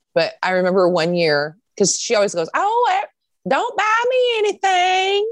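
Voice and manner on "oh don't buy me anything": put-on very high, slow, drawn-out thick Southern old woman drawl. Talking about yearly gifts, imitating a grandmother's thick southern accent. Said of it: "She has a very thick Southern accent".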